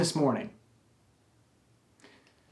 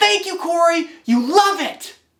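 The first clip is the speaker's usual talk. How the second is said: put-on very high, loud, excited toddler yell. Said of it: "He says".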